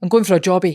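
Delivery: stronger Glasgow accent. Showing another speaker two Scottish accents, now the second: Glasgow accent. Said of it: "It's a bit more Glasgow".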